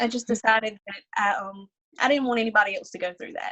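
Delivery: choking up, on the verge of crying. Explaining why they wanted the hospital option for families after them: choking up, near tears. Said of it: "I'm gonna cry. Sorry".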